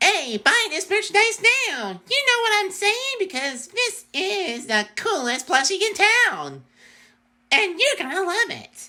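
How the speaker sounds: very high, squeaky cartoon chipmunk chatter. Pitching a chipmunk plushie as merchandise, in a high chipmunk voice. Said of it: "acting of like a chipmunk".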